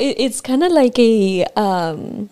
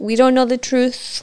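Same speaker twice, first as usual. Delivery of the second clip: plain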